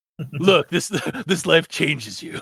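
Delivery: put-on brooding, dark, edgy tough voice. Reading a character's narration aloud again, mocking it: put-on dark deep voice. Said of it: "She has a really dark, like, deep voice".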